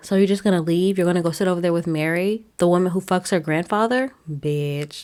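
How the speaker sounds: ordinary talk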